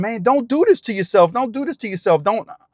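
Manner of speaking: put-on yelling voice. Retelling pleading with a woman on a bridge: retelling own yell. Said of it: "And I'm yelling".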